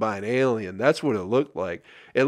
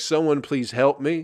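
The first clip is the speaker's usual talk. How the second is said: put-on scream; 3 semitones higher than usual. Retelling how the man who stuck his hand in the lion cage screamed, imitating a scream. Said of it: "The way he screamed was like".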